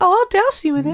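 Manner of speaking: squeaky-high animated mouse voice. Answering a joke about being burned alive: Minnie Mouse voice. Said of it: "Why do you sound like Minnie Mouse?".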